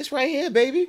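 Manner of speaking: put-on high, soothing grandma voice. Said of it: "she hit me with the grandma voice".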